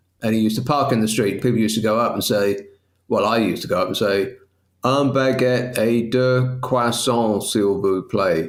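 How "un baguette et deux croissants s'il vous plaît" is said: acted speaking in French. Retelling going up to the baker's van as a child: imitating past self ordering in French. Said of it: "Did you say it like that?".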